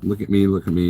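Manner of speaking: ordinary delivery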